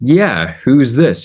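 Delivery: put-on Polish accent laid on thick. Retelling a phone call to a man named Adam, Adam's thick Polish accent. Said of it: "he had like a thick Polish accent".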